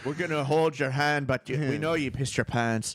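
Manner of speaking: put-on hard, tough-sounding Irish accent. Voicing a man's gangster Irish friends in a photo: Irish gangster voice. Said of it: "gangster Irish friends are like".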